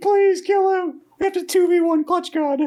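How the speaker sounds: play-acted urgent yelling, very high and loud. Retelling a tournament moment, screaming at a teammate: retelling a scream. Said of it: "I was just screaming at him".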